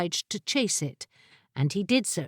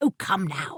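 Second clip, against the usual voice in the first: testy, cross, irritated, put-out delivery; 2 semitones lower than usual. The wizard reaches for a creature that jumps away from his grasp, cross. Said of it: "said the wizard Garstang crossly".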